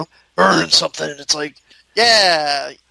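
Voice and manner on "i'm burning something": put-on big gruff voice. Speaker describing an actor's best lines, imitating a big gruff voice. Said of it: "like in terms of like the big gruff".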